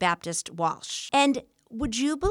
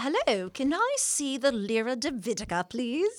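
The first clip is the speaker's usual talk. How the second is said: awful, bad, fake put-on English accent; 2 semitones higher than usual. Joking about walking into a museum to impress the staff, in a bad english accent. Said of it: "impress them with our English accent".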